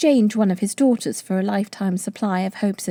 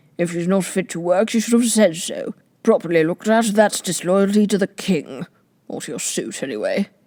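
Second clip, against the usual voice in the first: grunting character voice. Flapoon speaking from a cushioned seat by the window, grunting. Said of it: "grunted [name] from a cushioned seat by the window. / grunted [name] from a cushioned seat by the window".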